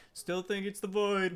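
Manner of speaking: high, loud yell in a put-on character voice. Voicing a character who yells back at another while walking through: yelling back in character. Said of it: "he kinda yells back at him".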